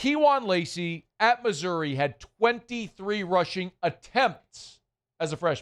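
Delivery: very slow, deliberate, word by word. Repeating a point to listeners a second time, slowly. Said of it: "Let me say that again slowly".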